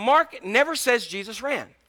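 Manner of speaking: ordinary delivery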